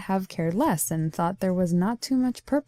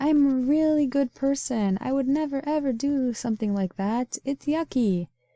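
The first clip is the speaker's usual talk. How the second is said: goody-goody innocent act, pitched up; 7 semitones higher than usual. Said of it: "I just played along".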